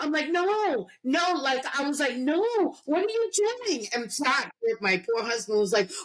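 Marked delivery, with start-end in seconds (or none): 0.3-3.9 imitated screaming, higher pitch. Retelling watching a police video, imitating her own past screaming. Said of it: "screaming at the".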